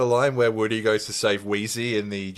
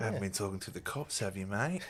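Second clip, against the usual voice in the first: put-on condescending voice, quieter; 3 semitones lower, 15 dB quieter than usual. Doing a Star Wars bit for the co-host: Ben Mendelsohn impression. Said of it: "Ben Mendelsohn in Star Wars".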